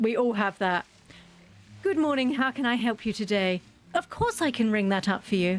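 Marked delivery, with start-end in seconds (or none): 1.8-5.6 sugar-sweet, sugary voice. Demonstrating the voice she uses with customers, sugar-sweet retail voice. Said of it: "I use the most sugar sweet voice".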